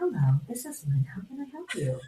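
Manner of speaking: sing-song, polished phone-answering voice. Recalling mom answering the phone while the kids fought, Lynn's phone voice. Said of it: "We called it her phone voice".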